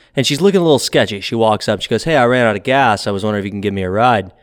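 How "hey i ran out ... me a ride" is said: usual speaking voice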